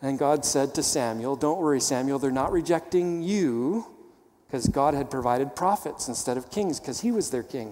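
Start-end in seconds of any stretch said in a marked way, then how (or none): none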